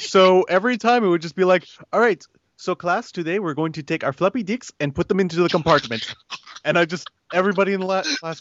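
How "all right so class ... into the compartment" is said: put-on strong Spanish accent, no s sounds. Recalling a middle school technology teacher addressing the class, imitating his Spanish accent. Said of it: "He had like the Spanish accent".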